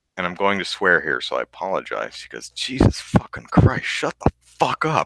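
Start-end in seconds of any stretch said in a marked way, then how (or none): 2.5-5.1 exasperated curse muttered under breath, slightly high. Retelling what a woman on the plane muttered: imitating a mutter under the breath. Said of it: "mutters under her breath".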